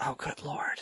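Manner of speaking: mumbling under breath. Retelling own reaction to hearing about the cartoon: muttering under breath. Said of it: "under my breath just go".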